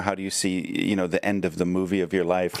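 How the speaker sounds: usual speaking voice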